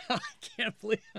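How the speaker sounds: sardonic, very high-pitched sarcastic delivery. Among former editors discussing unwelcome suggestions, sarcastic. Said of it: "She said sarcastically".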